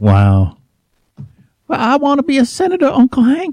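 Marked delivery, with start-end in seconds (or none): 1.7-3.5 very high, put-on Southern accent. Joking about a choice between two candidates, speak to Uncle Hank in Luann's Southern accent. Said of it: "Against her for having a Southern accent".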